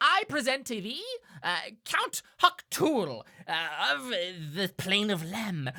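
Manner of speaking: high, loud character voice with wide swooping pitch. Voicing an imp presenting a fiend to the players: imp voice. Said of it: "the imp will".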